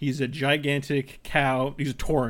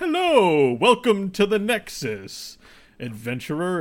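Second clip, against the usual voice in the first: lively, swooping, pitched-up, sing-song hero character voice; 5 semitones higher, 4 dB louder than usual. Describing a game's tutorial, the speaker quotes its greeting in an Uther Lightbringer voice. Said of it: "in his Uther voice".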